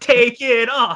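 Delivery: high, loud screaming from a crowd. Describing a primetime show's finale, imitating everyone there screaming. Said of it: "all screaming".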